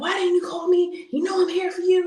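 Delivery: mock shrill yelling. Retelling picking up an airman from the police station: retelling own past yelling. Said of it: "I'm just yelling at her".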